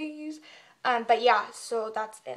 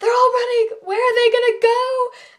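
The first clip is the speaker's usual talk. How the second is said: very high, shrill, wailing yell through sobs; 11 semitones higher, 11 dB louder than usual. Retelling a woman in a video, imitating someone sobbing and yelling. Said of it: "she's like crying while she's like sobbing and yelling".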